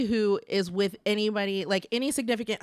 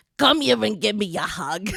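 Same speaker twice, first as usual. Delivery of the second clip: put-on Boston-New York accent; 3 dB louder than usual. Describing an accent people do, the speaker demonstrates it: smoky Boston-New York accent. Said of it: "Boston, New York, like".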